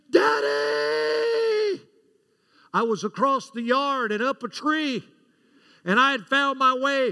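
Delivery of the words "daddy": terrified, very high, shrill, blood-curdling scream. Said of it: "that blood-curdling scream".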